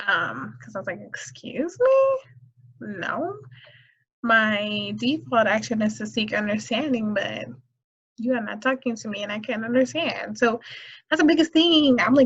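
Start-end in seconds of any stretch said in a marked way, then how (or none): none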